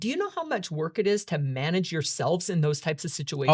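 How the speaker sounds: ordinary delivery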